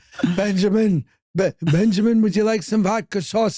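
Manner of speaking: over-the-top, exaggerated old man character voice. Imitating a man offering vodka sauce at the door, exaggerated character voice.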